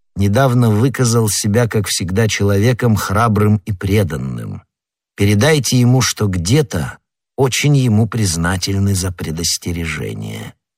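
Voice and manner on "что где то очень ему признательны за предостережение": ordinary delivery, nothing marked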